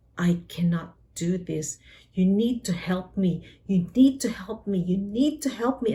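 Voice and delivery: loud, desperate, repeated mock pleading, crying out. Retelling begging god for help after the doctor left: retelling loud begging. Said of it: "in a loud voice begging God to help me".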